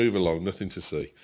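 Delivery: ordinary delivery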